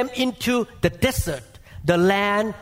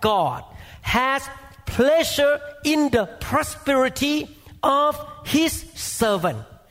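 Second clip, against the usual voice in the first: very slow, deliberate word-by-word reading, pitched up; 5 semitones higher than usual. Speaker reads a scripture verse aloud to listeners, reading very slowly. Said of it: "I'm going to read it slowly".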